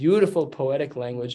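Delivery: plain reading voice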